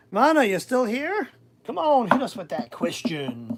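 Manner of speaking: sing-song TV quiz-host patter. Calling on viewers in the chat for tarot questions, in a game show host voice. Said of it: "That's my game show voice".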